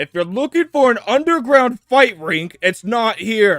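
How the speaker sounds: very loud, shrill, high-pitched call. A character announces to everyone in the bar, very loud. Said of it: "he'll like say this very, very loudly".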